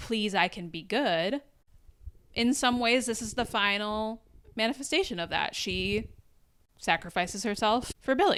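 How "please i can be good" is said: mock, earnest, begging plea. Retelling a character begging her mother's ghost: imitating begging.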